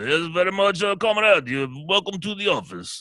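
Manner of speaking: put-on Russian accent. Speaker shows how they tease a Russian coworker: mock Russian accent. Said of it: "That's my Russian".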